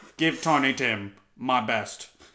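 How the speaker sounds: put-on British actor voice. Joking about actors in Muppet films: bad Michael Caine impression. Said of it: "Was that a pretty bad Michael Caine?".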